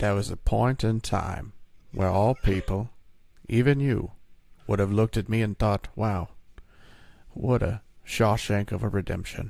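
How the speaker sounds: deep, slow, unhurried narrator voice. Joking about a film with the others: Morgan Freeman impression. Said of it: "That's my Morgan Freeman impression".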